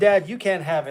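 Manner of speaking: plain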